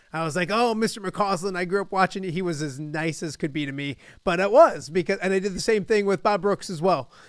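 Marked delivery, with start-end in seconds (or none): none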